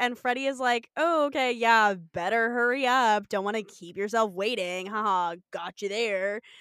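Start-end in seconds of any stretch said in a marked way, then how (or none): 1.0-6.4 smug, self-satisfied tone, laughing to himself. Retelling a TV scene, acting out Freddie's reply: imitating Freddie's smug tone. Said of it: "laughs to himself smugly".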